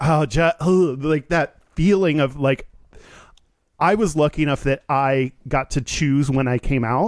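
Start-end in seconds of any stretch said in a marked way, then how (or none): 0.0-0.9 put-on nervous wavering voice, much slower. Retelling a man coming out live on air, imitating a wavering voice. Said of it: "his voice kind of like wavered".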